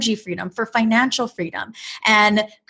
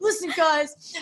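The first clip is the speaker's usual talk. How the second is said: high, fired-up, hyped motivational tone; 6 semitones higher, 5 dB quieter than usual. Speaker feeling fired up, addressing the listeners: Tai Lopez impression. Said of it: "I'm like Ty Lopez here".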